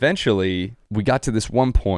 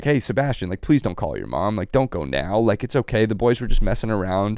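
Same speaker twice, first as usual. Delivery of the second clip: pleading, begging tone. Retelling how a friend's dad pleaded not to call mom: imitating Jim pleading. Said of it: "Jim started pleading".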